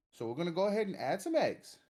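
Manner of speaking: uptalk, pitch climbing up on eggs. Imitating the way he talks, rising pitch at each phrase end. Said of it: "the way he talks, everything goes up".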